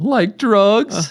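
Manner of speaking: voice going way up like a cartoon dog. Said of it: "he sounded like Scooby-Doo".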